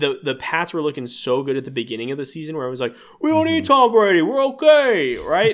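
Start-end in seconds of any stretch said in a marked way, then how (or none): 3.2-5.5 put-on very loud, very high, swooping Brooklyn accent. Recalling what he thought early in the football season, in a Brooklyn accent. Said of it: "I did a Brooklyn accent".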